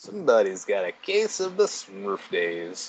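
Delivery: low, swooping cartoon cowboy voice. Riffing during banter about Smurf days, sounding like Woody from Toy Story. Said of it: "You said that like Woody does on Toy Story".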